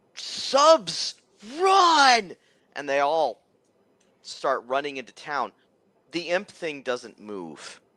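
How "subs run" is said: very high yell, run drawn out. Voicing fleeing bystanders warning each other to run: shouting. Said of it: "everybody else shouts".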